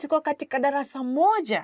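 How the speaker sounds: surprised, pitch rising on the final words. Demonstrating how to say a Swahili sentence, surprised, rising at the end. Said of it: "you kind of raise your voice a little bit".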